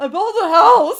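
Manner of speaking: breaking, shaky voice, very high and loud. Retelling a man's words to his partner at a house, imitating a shaky voice. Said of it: "his voice gets a little shaky there".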